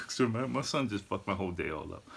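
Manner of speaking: ordinary talk, nothing marked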